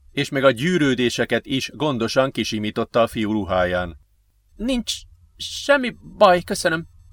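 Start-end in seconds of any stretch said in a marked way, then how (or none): 4.6-6.9 pitched-up groaning of the words. Ben answers the woman who pulled him up after his fall; groaned. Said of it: "nyögte Ben".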